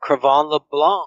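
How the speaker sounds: French Canadian accent on a name. Finally saying a player's name on the show: French Canadian accent. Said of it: "the French Canadian accent for me there".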